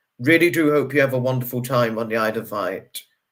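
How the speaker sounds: ordinary talk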